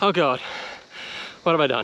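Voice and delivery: out of breath, winded and panting. Starting the climb up Springbrook, already out of breath. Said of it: "I'm out of breath already".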